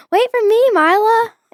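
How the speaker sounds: really high-pitched calling voice. Retelling how Maddie called after her going down the stairs, imitating Maddie's high-pitched voice. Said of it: "in that voice, because we both had like really high pitched voice".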